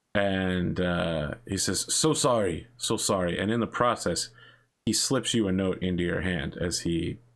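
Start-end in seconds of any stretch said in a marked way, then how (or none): 1.9-3.4 put-on apologetic, polite gentleman voice with Japanese accent. Voicing a gentleman who stumbles into the players: voicing a Japanese gentleman. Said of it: "a Japanese gentleman stumbles into you".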